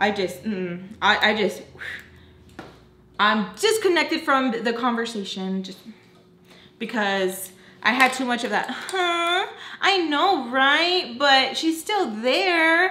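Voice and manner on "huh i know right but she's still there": high, loud whiny mock voice. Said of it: "that whiny, high-pitched, bitchy fucking voice".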